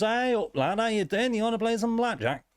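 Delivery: squeaky, very high-pitched voice. Voicing a well-dressed dealer at a casino table: well-dressed blackjack dealer voice. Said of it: "there's a very well-dressed man at sort of each table, and he goes".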